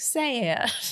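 slight southern drawl, just a touch, on sad. Retelling how Rory reacts to her empty drink, slight Southern accent. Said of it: "She says it like in a little southern accent".

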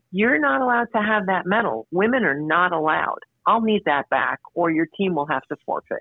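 reproving, admonishing delivery. Retelling what the tournament director told her: imitating an admonishing tone. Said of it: "in an admonishing tone".

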